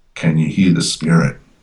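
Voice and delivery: normal talking voice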